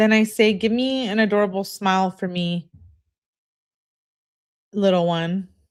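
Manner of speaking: plain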